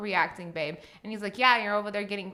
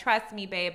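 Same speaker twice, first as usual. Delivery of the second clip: ordinary talk, nothing marked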